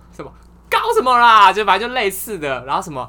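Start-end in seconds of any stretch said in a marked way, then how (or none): 0.7-1.5 abrupt, very loud bellowed yell, pitched high. Retelling how he suddenly shouted as everyone got ready for a short break, imitating a sudden yell. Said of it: "突然大喊说".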